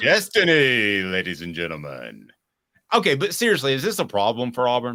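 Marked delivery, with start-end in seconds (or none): 0.0-2.3 adult nightclub announcer voice, lower pitch. Showing how he would sound as an adult nightclub announcer. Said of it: "if I decided to be a, uh, an adult nightclub announcer".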